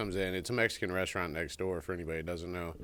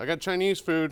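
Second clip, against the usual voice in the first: put-on thick Mexican accent, laid on heavy, pitched up; 10 semitones higher, 7 dB louder than usual. Imitating a man announcing what he brought as he comes in, heavy Mexican accent. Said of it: "with a heavy Mexican accent".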